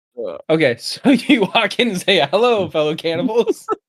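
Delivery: words barely out through laughter. At the game table, still cracking up, laughing while talking. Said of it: "sorry, I can't even breathe".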